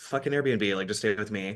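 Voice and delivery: plain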